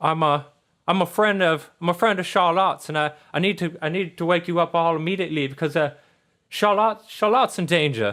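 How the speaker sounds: high teddy bear voice. Voicing a rundown teddy bear who wakes a player: Patches teddy bear voice. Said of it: "He's like".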